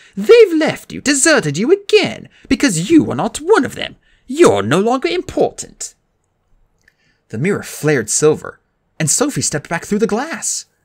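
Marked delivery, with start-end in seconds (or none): 0.1-5.9 gloating triumph, pitched very high and loud. Dee addresses Josh while pointing at the fading image: triumphant. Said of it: "Dee said triumphantly".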